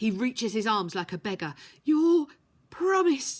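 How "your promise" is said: croaking, much higher and louder. Reading a story, the narrator voices a wounded man begging Eels, croaking. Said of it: "he croaks".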